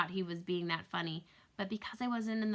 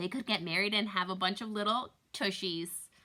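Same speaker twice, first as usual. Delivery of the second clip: ordinary delivery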